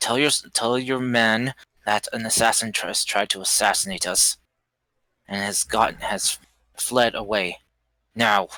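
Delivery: hushed whisper in a character voice. Voicing a character who whispers orders to a captive: whispering in character. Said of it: "whisper to her".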